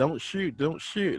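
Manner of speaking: mock scared, high-pitched, fearful pleading voice. Retelling how panicking game characters begged: imitating fearful pleading. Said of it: "holding their head down, like, in fear".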